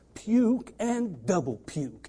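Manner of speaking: very slow, every word drawn out. Quoting a saying the way Brother Ron would say it: imitating Brother Ron. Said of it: "I'll say it like Brother Ron would say".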